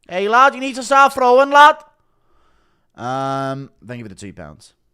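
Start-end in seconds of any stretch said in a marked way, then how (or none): 0.1-1.7 put-on furious bellow, shrill, very high and loud. Doing a requested impression of Paddy getting mad at Erceg: angry Paddy impression. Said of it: "Impression of Paddy getting mad at Erceg".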